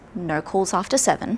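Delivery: ordinary delivery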